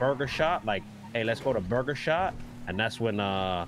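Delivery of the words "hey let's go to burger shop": plain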